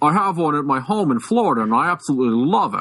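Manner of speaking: put-on Mid-Atlantic accent. Retelling what a customer at the gun store said: Mid-Atlantic accent.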